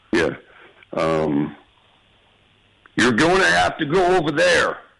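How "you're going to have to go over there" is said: put-on very high rat voice with American accent. An actor approximating a line he can't remember, American Rat Man voice. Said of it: "let me hear a little bit of an American's Rat Man".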